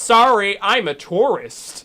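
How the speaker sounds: loud, very slow, drawn-out, spelled-out apologetic tone. Retelling a driver's excuse after going the wrong way: imitating a Canadian tourist's apology. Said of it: "He literally said it like that".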